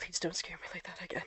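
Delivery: very hushed, quiet, soft, barely-there murmur. Narrator voicing a character who holds the listener tight; quiet murmur. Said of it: "he just quietly murmurs".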